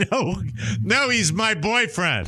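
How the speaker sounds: high, jokey, acted comedy voice, blurted out. Retelling his answer to a man asking about his buddy, too loud. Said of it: "in a voice that was too loud".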